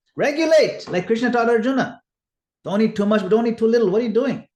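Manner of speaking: high, loud, stern scolding.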